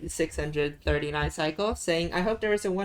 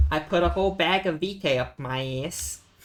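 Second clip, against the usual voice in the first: put-on New York accent. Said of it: "saying arse in the New Yorker accent".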